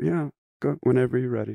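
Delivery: sweet, gentle, slightly high, unpressured delivery. Imitating a film director telling actors to start: sweet gentle Ken Kwapis voice. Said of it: "he kinda sounded like this".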